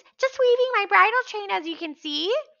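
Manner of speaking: loud, very high falsetto. Narrator reads Grover answering the Cyclops who demands what he is doing: Grover's falsetto voice. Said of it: "Grover said in his falsetto voice".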